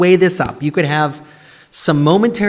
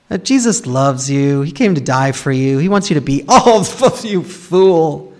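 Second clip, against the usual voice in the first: put-on mocking voice. Retelling how a man who would just laugh mocked: imitating a man mocking. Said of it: "I'm not gonna use that voice".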